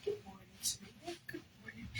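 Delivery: quiet, soft, toneless whisper.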